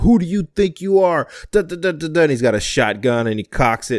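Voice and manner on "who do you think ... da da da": furious, pitched-up shouting. Telling a story, the speaker quotes a man coming out of his house, imitating an angry man. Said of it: "He's angry".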